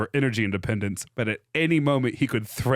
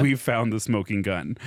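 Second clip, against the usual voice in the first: normal talking voice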